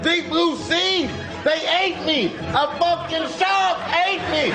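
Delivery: put-on voice, yelling high as if unable to stop.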